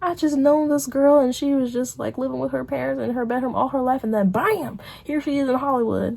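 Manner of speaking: American Southern accent. Explaining why they started doing YouTube, speaking in a southern accent. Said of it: "I don't know why I'm speaking in a southern accent".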